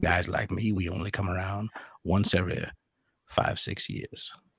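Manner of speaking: breathy movie-star murmur, barely above a whisper. Talking about their version of Morgan Freeman, the speaker does a Morgan Freeman impression. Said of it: "I got my version of Morgan Freeman".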